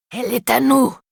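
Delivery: raspy monstrous growl. Reading a vampire's line aloud: growling in a raspy inhuman voice. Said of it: "gronde-t-il, d'une voix rauque, inhumaine".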